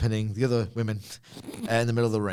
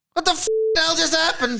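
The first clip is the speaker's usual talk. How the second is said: put-on shocked voice, much higher pitched; 6 dB louder than usual. Recapping the show's ending, the speaker re-enacts Ava's line in a mock-shocked Ava impression. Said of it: "the register went up a little bit".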